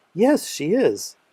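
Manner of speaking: bright, pleased, happy, cheerful voice. Teaching how tone changes, answering that Sarah is a good cook, happy. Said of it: "If Sarah is a good cook, I'm happy".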